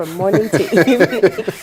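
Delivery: speaking through laughter.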